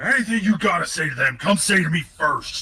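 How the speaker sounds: booming shout. Speaker voicing a character calling out to all of them, bellowing. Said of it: "he bellows out to all of them".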